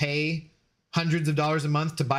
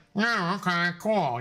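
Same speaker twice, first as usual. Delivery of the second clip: blocked-up, stuffy, sick-sounding voice; 3 semitones higher than usual. Retelling answering the boss while sick: imitating own congested voice. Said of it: "I'm totally congested".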